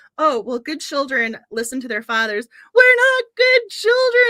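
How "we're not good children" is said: booming, shrill, very loud, high yell stretched slow. Retelling how a child shouted when it was time to leave the service: imitating someone shouting. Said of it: "she starts shouting".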